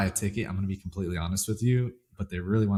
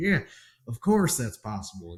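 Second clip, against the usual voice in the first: put-on speaking in a Texas accent; 2 semitones higher than usual. Retelling how Dave Ramsey agreed to a photo: Dave Ramsey Texas accent. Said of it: "in his Texas accent".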